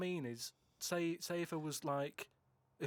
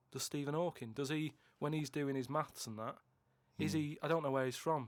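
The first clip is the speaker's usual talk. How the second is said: plain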